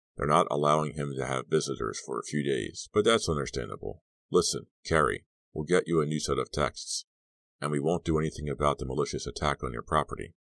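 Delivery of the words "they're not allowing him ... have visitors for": ordinary delivery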